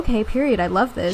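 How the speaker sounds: plain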